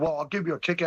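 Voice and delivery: snooty, snotty, snippy tone. Retelling what an officer said at a gate, imitating a snotty officer. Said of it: "he got really snotty".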